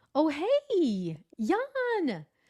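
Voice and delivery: upbeat, rising, hey drawn out. Recalling how their own voice went up on hearing a name, voice going up. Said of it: "my voice went".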